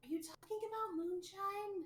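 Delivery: quiet, hushed whisper. Voicing Penelope leaning over to ask Johnny a question: whispering. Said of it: "whispers to Johnny".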